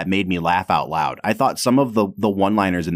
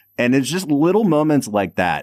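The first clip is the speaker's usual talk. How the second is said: plain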